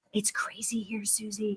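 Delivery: whispered. Retelling what the CNA said on the call: imitating a whisper. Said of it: "the C N A is kind of whispering".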